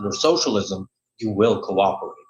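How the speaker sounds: play-acted grave, somber, foreboding tone. Retelling a speaker who told the audience to cooperate, then turned mock-somber. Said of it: "changes uh, tone of voice to something more somber".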